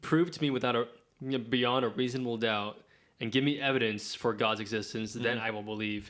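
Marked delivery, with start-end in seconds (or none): none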